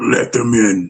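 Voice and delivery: deep, low voice from within. Retelling the voice that came from inside the speaker, in a deep voice. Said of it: "in this deep voice said".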